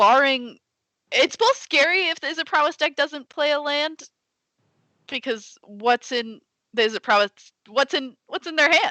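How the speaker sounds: very high voice climbing with fright. A card player works out what the opponent holds, scared, voice rising. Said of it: "voice is getting higher as I'm getting more scared".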